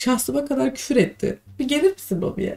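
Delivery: crying, high, soft tearful voice.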